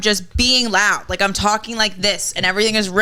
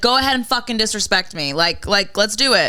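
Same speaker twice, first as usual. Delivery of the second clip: raised, loud voice. Retelling a response to being disrespected: imitating own raised voice. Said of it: "raised my voice and be like".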